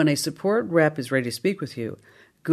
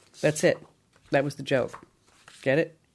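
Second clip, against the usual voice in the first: usual speaking voice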